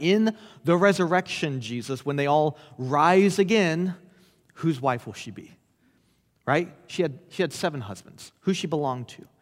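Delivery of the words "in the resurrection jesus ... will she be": plain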